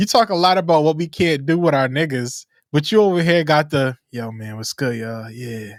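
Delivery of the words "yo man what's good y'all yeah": put-on low, quiet, smooth dad voice. Teasing a friend by imitating his low quiet daddy voice. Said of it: "the daddy voice on right now".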